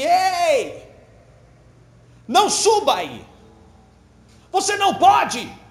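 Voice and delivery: high, very slow desperate shout, "Ei" stretched. Narrator reads a person at the foot of a mountain calling to a climber, shouting. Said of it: "gritou assim".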